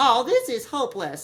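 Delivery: put-on high little-kid voice. Retelling a line from an audio drama: imitating a little kid's voice. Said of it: "of a little kid".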